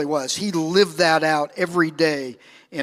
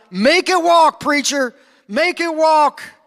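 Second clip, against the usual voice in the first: mock, very high-pitched, loud shout; 11 semitones higher, 5 dB louder than usual. Retelling a preacher's sermon, speaker quotes the congregation's reply: retelling the congregation's yell. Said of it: "the congregation would yell out".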